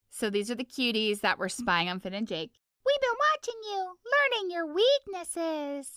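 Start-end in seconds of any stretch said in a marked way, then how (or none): 2.8-5.9 very high, squeaky childlike cartoon voice. Asked for a character impression, voicing the cuties spying on Finn and Jake, Ralph Wiggum-like voice. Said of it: "Sounds like Ralph Wiggum again".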